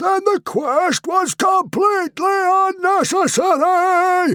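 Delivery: enraged, furious bellowing roar, pitched very high. Reading a story aloud, Stoic declares the quest pointless: roaring in anger. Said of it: "roared Stoic".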